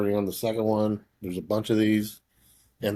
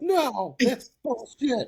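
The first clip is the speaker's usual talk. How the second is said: put-on upset voice, higher pitch. Retelling the other speaker's reaction to a movie twist: imitating someone upset. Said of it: "I was upset".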